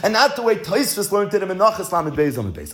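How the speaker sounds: plain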